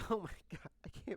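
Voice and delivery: mock crying mixed with laughter. Recounting how a woman cried the second time, imitating her crying-laughing. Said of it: "So this is my impression of her".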